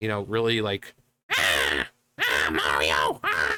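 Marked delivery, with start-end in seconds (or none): 1.3-3.6 very low, slow, drawn-out swooping voice. Showing how all the Toad characters sound: Toad voice. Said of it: "all the Toads have, like, this".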